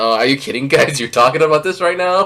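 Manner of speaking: dry, flat, expressionless deadpan delivery. Retelling how Roxy reacted to talk of the splash ending: imitating Roxy deadpan. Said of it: "just such deadpan".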